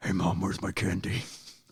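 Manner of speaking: low, soft, growly, grumbling voice. Acting out what he says to his mom, in a growly voice. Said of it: "he's got the growly voice".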